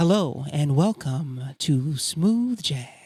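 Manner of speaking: put-on radio announcer, dj voice. Podcast host shows his co-host how he'd sound on air, radio voice. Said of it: "if we talked like that".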